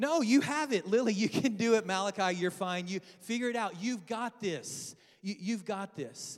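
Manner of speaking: affectionate, loving, sarcastic encouraging tone. A dad retells answering his kids when they ask for help: retelling a loving sarcastic reply. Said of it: "in the most loving, sarcastic way possible".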